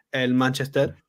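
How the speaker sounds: put-on Spanish-accented pronunciation. Retelling how a team name had to be said there: spanish pronunciation of a team name. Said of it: "I would have to say them in their accent".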